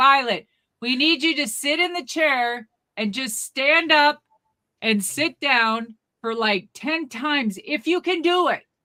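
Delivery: play-acted loud shouting. Retelling how people at a table spoke to Violet, retelling a yell. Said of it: "They're still yelling".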